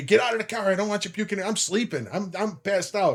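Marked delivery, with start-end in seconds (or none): 0.0-1.4 fast, hurried, irritated and angry scolding. Retelling the wife yelling at him after they finally get home, retelling wife's yell. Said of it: "she's yelling at me".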